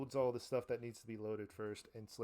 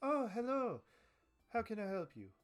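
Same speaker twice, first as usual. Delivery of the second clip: very high-pitched, swooping halfling shopkeeper voice; 11 semitones higher, 4 dB louder than usual. Voicing a halfling woman greeting a customer in her gun shop: halfling woman voice. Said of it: "you see this halfling woman ... she's like".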